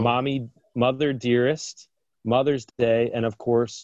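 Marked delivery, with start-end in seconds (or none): none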